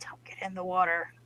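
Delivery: breathy, barely voiced, very hushed whisper. Warning everybody in character not to enter the water: whispering. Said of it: "And I whisper to everybody".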